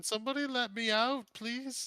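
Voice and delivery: tiny, small, very high little calling voice. A prisoner locked behind a door calls out to those outside in a small voice. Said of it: "a small voice from behind the door".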